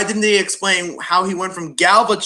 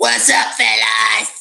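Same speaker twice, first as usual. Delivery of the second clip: rough, creaky, raspy streetwise gangster voice; 2 semitones higher than usual. Quoting a character's line from the TV spots: imitating Mohawk's voice. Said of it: "in the T V spots, it goes".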